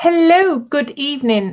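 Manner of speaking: put-on cartoon leprechaun voice. Greeting everyone at the start of the evening: leprechaun voice. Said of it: "Why do you sound like a leprechaun".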